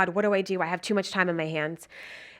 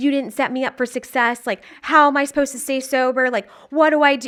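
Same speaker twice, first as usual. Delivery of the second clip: loud, high, frantic, freaked-out screaming; 6 semitones higher, 7 dB louder than usual. Retelling yelling and screaming at mom: imitating own past yelling. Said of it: "yelling at my mom and screaming at her".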